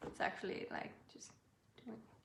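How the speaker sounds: very soft, blurry, breathy half-whispered mumble. Feeling unsure of what they're saying, the speaker blurs it out, mumbling. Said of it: "I'm sorry, I'm mumbling".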